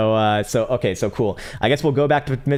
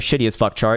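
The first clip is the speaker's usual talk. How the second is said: ordinary talk, nothing marked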